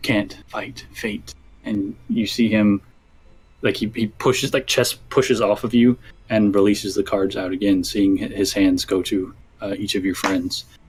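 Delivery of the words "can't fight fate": soft whisper, very close to the ear. Narrating a scene, a figure slumps over you and whispers in your ear: whispering. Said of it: "he turns and he whispers in your ear".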